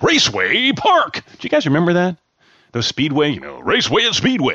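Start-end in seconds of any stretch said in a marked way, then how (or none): 0.0-1.2 high, slow, stretched-out commercial announcer voice. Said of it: "Remember those big commercials?".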